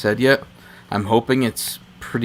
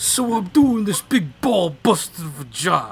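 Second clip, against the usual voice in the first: put-on New York accent, very drawn out and slow; 8 semitones higher than usual. Imitating a guy from the original Total Recall: put-on New York accent. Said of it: "He's got like this New York accent. He's like".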